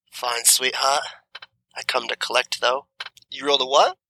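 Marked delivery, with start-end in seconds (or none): 0.2-2.9 low rumbling growl with a sweet-sounding edge. Voicing the orc woman accepting a bribe: growling through a grin. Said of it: "kinda growls through a grin".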